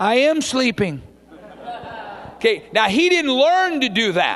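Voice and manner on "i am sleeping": put-on small three-year-old child's voice. Speaking to a congregation, retelling a three-year-old answering at bedtime, in Luke's little three-year-old voice. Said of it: "this little three-year-old voice says".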